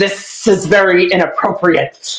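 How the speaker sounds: mock rapid lisping. Retelling a confronted man's words from a video: imitating a fast lisp. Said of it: "lisping a mile a minute".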